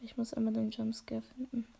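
soft whisper.

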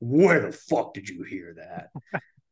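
furious, angry fatherly outburst. Retelling a father's reaction to swearing: imitating an angry dad. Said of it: "good impression of your dad being mad".

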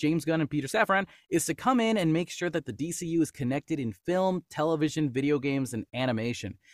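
plain

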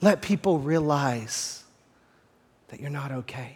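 put-on whisper. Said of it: "the Holy Spirit wants to whisper warnings".

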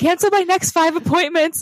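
thrilled yell. Acting out a therapist calling over to her assistant: retelling a yell. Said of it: "she yells over to her assistant".

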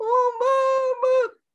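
very high, drawn-out sobbing wail. Speaker retells phoning her mom after Leo moved out, imitating her own bawling. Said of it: "I was bawling like".

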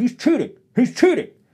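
whiny yelling, high-pitched and loud.

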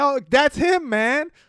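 loud yelling. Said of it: "yelling at the T V".

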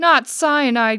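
loud gasped exclamation, caught on a breath. Narrator reads Sweet Pea answering right after Porcini: gasping. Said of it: "gasped Sweet Pea".

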